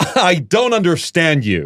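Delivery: put-on flawless Californian accent, drawn out very slowly. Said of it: "a perfect, like, Californian accent".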